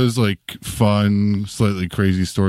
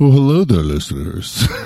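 silky smooth put-on voice; 3 semitones higher, 4 dB louder than usual. Podcast host jokingly poses as co-host Marie Mayhew greeting listeners, silky smooth. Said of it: "that silky smooth voice".

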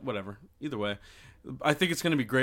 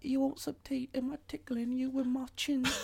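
put-on English accent, very high and soft; 13 semitones higher, 5 dB quieter than usual. Retelling how he nuzzled the speaker, quoting him: imitating his english accent. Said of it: "Does he have an English accent?".

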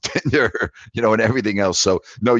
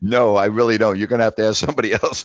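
talking through laughter, laughing through the words. Turning down a caller's request for dating advice, laughing while talking. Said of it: "I'm laughing".

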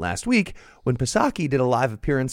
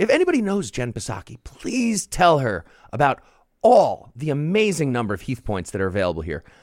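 ordinary talk, nothing marked

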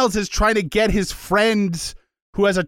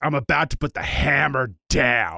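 deepest, gravel-heavy, serious manly voice; 7 semitones lower, 3 dB quieter than usual. Describing how a certain guy talks, doing the deepest, most gravelly voice. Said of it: "the deepest, most gravelly voice".

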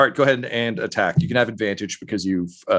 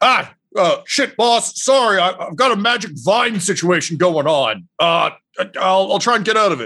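high yell, shouted out in character; 8 semitones higher, 4 dB louder than usual. Voicing a character caught by magic vines, yelling in character. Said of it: "Just yells".

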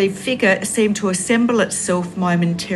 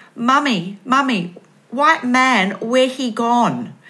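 put-on small child's broken toddler baby talk; 5 semitones higher than usual. Mother retells what her two-year-old daughter said, imitating toddler baby talk. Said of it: "in her baby talk".

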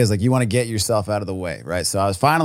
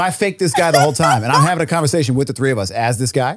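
plain

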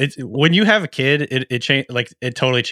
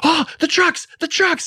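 mock-thrilled, very high-pitched excited squeal. Retelling calling out to Calvin as garbage trucks pass, re-enacting excited screaming. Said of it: "I start screaming at Calvin".

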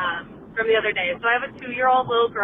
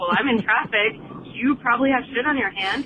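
plain

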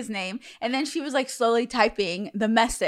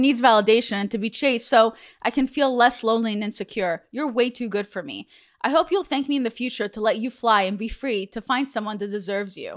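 normal talking voice

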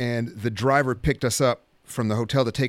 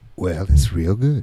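deep, slow, louder voice; 5 semitones lower, 6 dB louder than usual. Answering a question in character: Morgan Freeman impression. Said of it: "let me ask you a question, Morgan Freeman".

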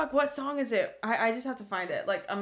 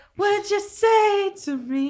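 put-on breathy voice, higher and louder; 12 semitones higher, 9 dB louder than usual. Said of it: "it's so breathy".

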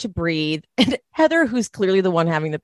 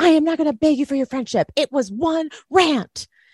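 high-pitched, shrill screaming; 7 semitones higher than usual. Retelling an argument between two women, acting out one screaming at the other. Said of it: "Lisa is screaming at Meredith".

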